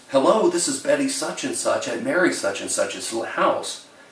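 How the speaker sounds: mock very formal, proper, courteous phone voice. Retelling how his grandmother's sister answers the phone, imitating Betty, very formal. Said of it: "she says it really formal".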